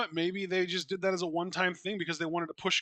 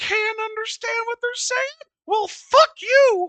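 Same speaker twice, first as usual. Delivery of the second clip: very high, loud, squeaky cartoon voice; 8 dB louder than usual. Commentating an event with no English subtitles, in a Mickey Mouse voice. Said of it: "Mickey Mouse voice there".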